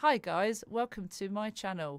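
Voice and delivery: very loud, stiff, canned robotic delivery. Demonstrating how reading an AI-written script would sound, robotic scripted voice. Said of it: "and sound like a robot".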